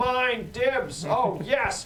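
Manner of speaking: very high, squeaky, very slow, drawn out, loud. Voicing a character calling over sending stones: Tim's voice. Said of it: "you just hear Tim's voice being like".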